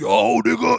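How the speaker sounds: very loud, high-pitched wrestler-style hype call. Retelling getting off the train with his crew, imitating Nace.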